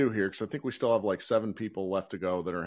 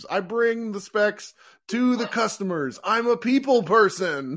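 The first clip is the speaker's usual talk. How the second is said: very high, loud, slow, shrill drawn-out scream; 10 semitones higher, 5 dB louder than usual. Quoting the guy who screams in Office Space: Office Space screaming guy impression. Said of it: "in Office Space who screams".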